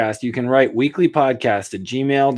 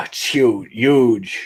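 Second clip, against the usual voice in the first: nervous put-on Brooklyn accent. Doing an impression as requested: Donald Trump impression. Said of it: "I did my impression for Mark".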